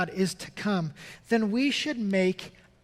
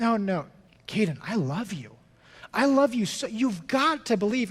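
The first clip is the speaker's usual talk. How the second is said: put-on child voice, persistent pleading; 2 semitones higher than usual. Retelling a son pleading with his brother through the wall: imitating a child pleading. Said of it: "he's just pleading with him".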